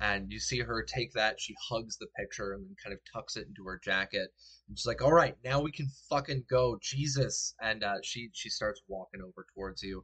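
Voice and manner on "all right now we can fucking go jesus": exasperated, fed up, crying, loud and high. Voicing a character tucking away a picture: crying and annoyed. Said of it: "She's still crying".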